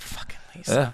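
mutter under breath. Showing what he says when his wife does something, retelling muttering under breath. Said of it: "I'm like under my breath".

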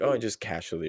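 normal talking voice

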